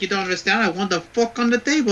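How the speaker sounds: put-on Italian accent in an Italian man voice. Telling a joke about an italian man ordering at a restaurant: italian man voice. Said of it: "the Italian man".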